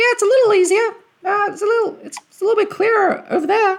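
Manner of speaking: very high, loud, shrill little imp voice. Narrating the game, the speaker voices the imp scout reporting from his vantage: imp voice. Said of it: "let me do an imp voice".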